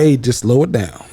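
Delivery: put-on older-sounding small-town sheriff voice. Acting out the small-town sheriff pulling a driver over: imitating the small-town sheriff. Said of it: "he like".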